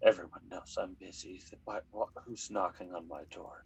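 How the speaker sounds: soft, grumbling, grumpy mutter under the breath. Game narrator voicing someone behind a knocked-on door, muttering almost insults. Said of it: "you hear a voice muttering almost insults".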